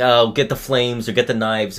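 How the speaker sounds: normal talking voice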